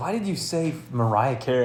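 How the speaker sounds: normal talking voice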